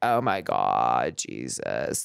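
low vocal fry, "God" drawn out. Imagining the Virgin Mary talking to Jesus, with vocal fry. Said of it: "don't do the vocal fry".

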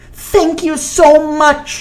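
excited exclamation, pitched very high. Hugging him, she speaks: exclaiming. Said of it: "she exclaimed".

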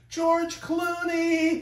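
acted very high, shrill shriek. Retelling how a woman greeted him in her restaurant, retelling a scream. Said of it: "she screams".

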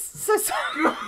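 high, breathless, laughing voice.

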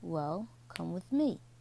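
ordinary delivery

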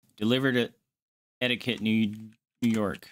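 plain

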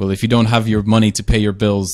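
ordinary talk

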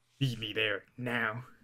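put-on confident character voice. Describing a character's tone of voice, acting Shiru, put-on confidence. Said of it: "With confidence".

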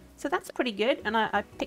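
ordinary delivery

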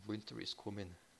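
put-on English accent. Describing a character's way of speaking, the speaker imitates his english accent. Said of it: "his English dialect".

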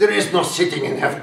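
loud, high, put-on Russian accent. Retelling a woman's words spoken in the speaker's ear, imitating a Russian accent. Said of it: "this Russian accent in my ear".

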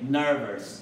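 nervous, stress on first syllable ner-. Teaching english word pronunciation: stress on first syllable of nervous. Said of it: "重音在第一节".

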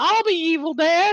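very high, shrill, loud, obnoxious puppet voice. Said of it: "talking like".

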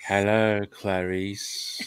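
chilling, low, creepy, sinister villain voice. Repeating a film line after the other speaker tried it, creepy Silence of the Lambs villain. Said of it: "That really did send a shiver up my spine".

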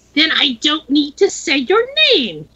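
shrill, high, screeching delivery. Narrator reading a dead-faced foe's reply to a taunt, high, screechy voice. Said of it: "he said in a high, screechy voice".

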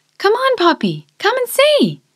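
eager, excited call, very high and swooping. A girl calls poppy to come and see her work: excited. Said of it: "she excitedly ran".

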